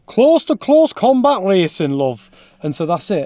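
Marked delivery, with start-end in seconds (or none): 0.2-2.4 loud, slow, bad put-on Northern English accent. Retelling what northern lads said about touring cars: bad northern english accent. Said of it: "That was a really bad accent".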